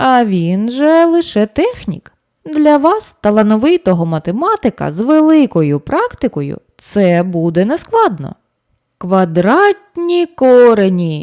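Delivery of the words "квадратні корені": enthusiastic, delighted mumble. A narrator voices a character's reply, mumbled with delight. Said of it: "захоплено промимрив Льосер".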